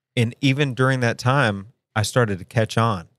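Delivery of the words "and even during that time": plain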